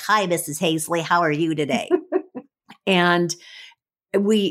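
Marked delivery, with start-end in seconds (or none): 0.0-1.9 silly put-on cartoonish boy voice. Describing seventh grade boys who talked in cartoonish voices, imitating them. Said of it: "They had these kind of cartoonish voices where they would be like".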